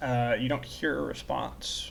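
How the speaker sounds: ordinary talk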